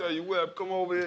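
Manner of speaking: put-on very high-pitched, loud, strong New York accent. Retelling how an older teammate talked: Chris Mullin New York accent. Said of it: "New Yorker, talk like this".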